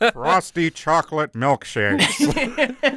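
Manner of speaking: put-on cartoon dad voice. Recalling early-season episodes, doing Homer Simpson: early Homer Simpson voice. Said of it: "the early season one ... Homer".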